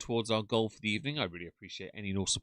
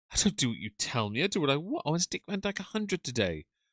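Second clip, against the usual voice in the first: put-on English accent on every word, pitched up; 5 semitones higher than usual. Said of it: "Best English accent ever".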